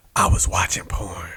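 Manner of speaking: hushed whisper, said aside. Telling a story about the past, dropping into a whisper. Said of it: "I don't know why I'm whispering".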